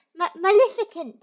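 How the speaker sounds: mock babyish mispronouncing voice. Imagining a baby trying to pronounce Maleficent: imitating Baby Goldie. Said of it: "like Baby Goldie, going".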